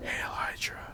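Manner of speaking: unvoiced, hushed, very quiet whisper. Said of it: "whispers into the ears".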